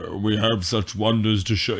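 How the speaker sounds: deep, spooky voice. On a podcast, quoting the original film's famous line in the weird, deep Hellraiser voice. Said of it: "the weird, deep, oogly-boogly voice".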